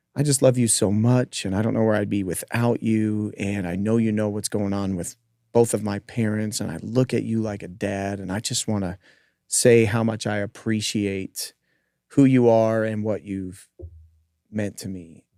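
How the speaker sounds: mock crying, sobbing and tearful through every word. Acting out what she said to the speaker, imitating someone sobbing. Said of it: "she just starts sobbing".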